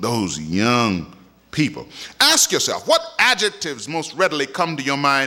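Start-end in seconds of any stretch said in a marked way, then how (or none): 0.0-1.2 contemptuous, disgusted, disdainful sneer on the words. Showing the temptation when saying young people: disgusted, disdainful tone. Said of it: "there's a temptation to say it with disgust and disdain".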